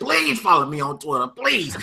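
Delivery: imploring, desperate, pleading begging tone. Retelling begging a guest to follow on Twitter: retelling own begging. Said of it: "I shed a couple of tears and I begged".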